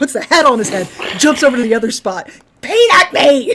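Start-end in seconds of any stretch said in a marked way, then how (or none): 2.6-3.5 very high, loud, enraged squawking screech. Retelling a monkey screaming at its handler: imitating a screaming monkey. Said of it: "he's screaming at the man".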